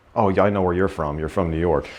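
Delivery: normal talking voice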